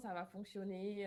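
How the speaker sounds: ordinary talk, nothing marked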